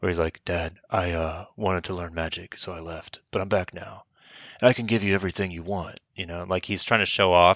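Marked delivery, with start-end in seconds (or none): 0.4-6.0 cool, distant, oddly aloof, detached delivery. Retelling a film scene, quoting the returning son: Keanu Reeves-like aloof delivery. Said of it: "this weird Keanu Reeves thing going".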